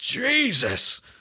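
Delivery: very high, thunderstruck, stunned disbelief. Retelling a film moment where a man gets grabbed: Jack Nicholson shocked "Jesus!". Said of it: "Jack Nicholson's finest line delivery".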